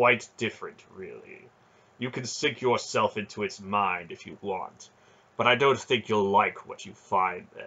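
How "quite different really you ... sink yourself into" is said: usual speaking voice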